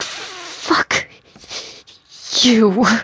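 very high, forced out through clenched teeth. A woman with a hook in her shoulder curses at Jordan, through gritted teeth. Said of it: "she said through gritted teeth".

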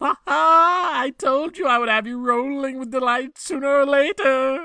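shrill, very high, mocking, taunting cry. Narrator voices a character calling out to the crowd, a mocking cry. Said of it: "He cried out mockingly".

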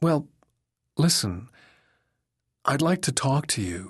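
uncertain, hesitant, unsure. Carolyn, having interrupted a man at work, tells him she wants to talk, uncertain. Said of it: "Carolyn said uncertainly".

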